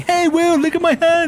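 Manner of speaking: very high, loud shout. Telling a story of Tomo calling to Will from the side of a chopper, imitating Tomo's exact voice. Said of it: "in that exact voice".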